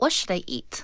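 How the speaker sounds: breathy, near-whispered, shifted tone. Acting out something she finds herself saying: imitating her own changed tone. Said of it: "Do you notice that her tone changed there".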